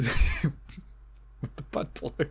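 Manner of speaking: slow, breathy, laughing through the words.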